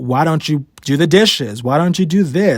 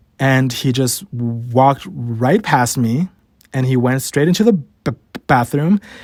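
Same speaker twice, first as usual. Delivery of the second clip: ordinary talk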